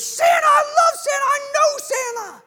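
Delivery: put-on gushing excitement, very high and loud. Retelling a movie scene, imitating Buddy the Elf with great enthusiasm. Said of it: "just in such great enthusiasm".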